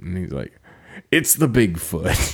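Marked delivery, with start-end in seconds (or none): 1.1-2.3 put-on serious voice, much lower. Retelling a movie scene about the government sending him out, mock-serious Sam Elliott voice. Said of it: "he's being so serious".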